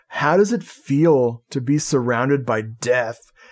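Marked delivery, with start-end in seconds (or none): none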